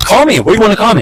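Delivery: put-on very high, confrontational, taunting, in-your-face tone. Retelling how the other man got in his face: imitating someone getting in his face. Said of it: "slams his glasses down".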